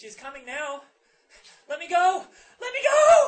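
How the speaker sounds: put-on shrill, very high, loud girl's shriek, climbing. Retelling a man in a trance crying out, retelling screaming in girl's voice. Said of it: "in this girl's voice, starts screaming".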